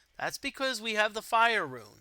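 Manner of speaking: ordinary delivery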